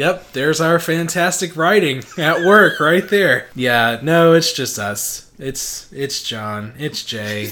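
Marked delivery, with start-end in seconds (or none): 3.5-7.5 deflated, underwhelmed, disappointed, let-down tone. Introducing the podcast hosts, disappointed. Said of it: "You sound so disappointed".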